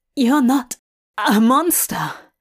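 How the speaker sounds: gasping out words. Narrating a dazed character speaking to a stranger, gasping. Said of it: "he gasps".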